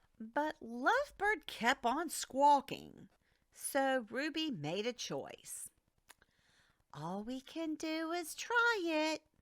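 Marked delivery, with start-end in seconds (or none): 6.9-9.2 small, wee storybook voice. Narrating a story, Ruby answers while Lovebird keeps squawking: tiny voice. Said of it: "she said in a tiny voice".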